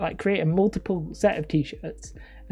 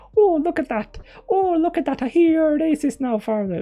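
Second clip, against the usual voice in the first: very high, slow put-on Irish accent; 10 semitones higher, 6 dB louder than usual. Imagining talking over a video the group watches together, irish accent. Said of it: "that Irish accent was the best one".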